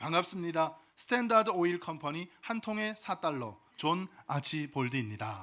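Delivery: ordinary delivery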